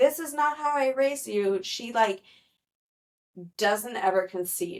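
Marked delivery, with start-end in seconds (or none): 0.0-1.6 put-on panicked outburst, higher. Retelling a scene where a father at dinner is freaking out: imitating a father freaking out. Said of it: "freaking out and is just like".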